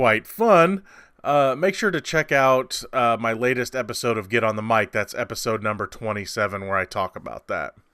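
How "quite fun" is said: ironic, tongue-in-cheek, slightly high sarcastic tone. Describing an experience at the theater, sarcastic. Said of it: "I'm being sarcastic here".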